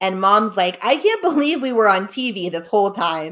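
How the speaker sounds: ordinary delivery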